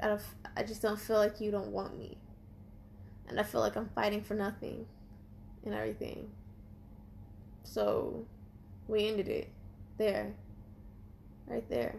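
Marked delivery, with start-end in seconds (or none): none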